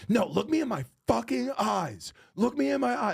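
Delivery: high, mock furious screaming. Retelling a comic confronting a heckler: imitating her screaming, actually mad. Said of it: "screaming, like, actually mad".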